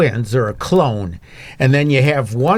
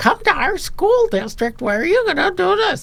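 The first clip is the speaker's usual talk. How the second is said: very high, goofy commercial voice. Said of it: "he's got this real high voice".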